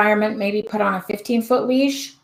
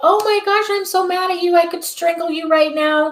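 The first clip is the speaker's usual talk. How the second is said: cheerful, fake-happy, bright, pitched-up voice; 8 semitones higher than usual. Acting out calling back dogs that ran off, in a fake-happy voice. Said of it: "I do it in my happy voice".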